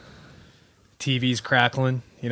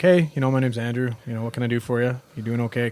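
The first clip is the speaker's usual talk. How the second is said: ordinary talk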